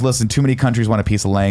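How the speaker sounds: normal talking voice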